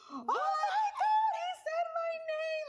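starstruck freak-out, very high, very slow, drawn out. Retelling a friend's reaction to being greeted by name: imitating someone freaking out. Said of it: "she was freaking out".

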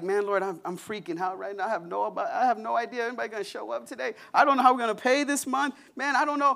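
fretful, panicked, anxious voice, high and rising. Retelling a past prayer before a Sunday service: imitating own anxious prayer. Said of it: "You wanna talk about worry and fear".

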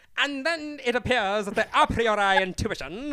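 very loud, booming, drawn-out, grand cartoon villain voice. Retelling reading Kant aloud in Snapchat videos to cheer someone up: Disney villain voice. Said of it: "with, like, Disney villain voice".

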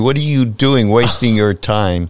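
mock, put-on shouting.

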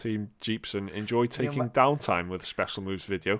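ordinary delivery

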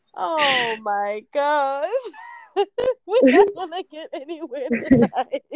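high-pitched, laughing through the words.

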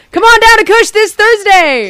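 shrill, high car-salesman shout at full volume. Joking about selling weed like a car salesman, the speaker pitches a sale: yelling like a car salesman. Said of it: "Don't yell on the mic".

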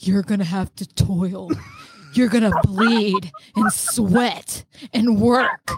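voice sunk right down, very deep. Retelling what a man said while looking at the speaker, imitating a voice dropping very low. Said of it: "his voice like drops like 12 octaves".

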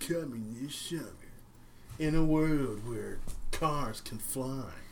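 epic movie trailer announcer voiceover read. Describing a movie, the speaker does the trailer voiceover: movie trailer voiceover voice. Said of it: "the voice over the trailers".

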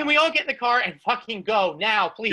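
plain

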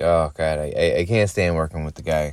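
usual speaking voice

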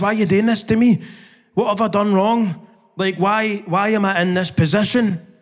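mock, pained, screaming outcry. Recounting the moment he cried out to god, retelling screaming at god. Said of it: "Screaming at God".

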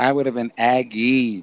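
emphatic repeat of aggy.

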